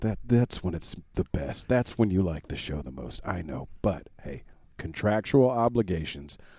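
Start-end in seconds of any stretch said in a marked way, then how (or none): 0.0-3.2 creepy delivery, lower and quieter. Addressing the listener about enjoying the show, creepy tone. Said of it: "That was a really creepy intro".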